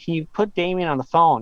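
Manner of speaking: plain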